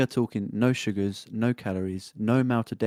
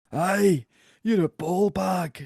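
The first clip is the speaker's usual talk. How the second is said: put-on very high-pitched old-man voice with Irish accent; 9 semitones higher, 3 dB louder than usual. Reminded of a film, quoting its old guy as an old guy from Dodgeball impression. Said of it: "Can you do that in like an Irish accent?".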